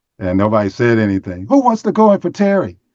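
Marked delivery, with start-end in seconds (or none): 1.5-2.7 put-on very high, shrill yelling shout. Retelling how the upset coach yelled at the bench: imitating a coach yelling. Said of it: "he yelled again".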